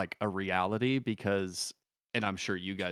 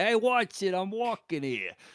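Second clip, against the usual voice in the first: put-on Cockney accent, pitched very high; 11 semitones higher, 4 dB louder than usual. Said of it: "have a perfect Cockney accent".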